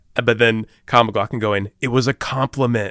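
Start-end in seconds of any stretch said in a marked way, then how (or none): 1.8-2.9 mock, most self-satisfied, smug delivery. Retelling a movie scene, imitating Kyle MacLachlan: douchebag delivery. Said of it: "he says it in the most douchebag way possible".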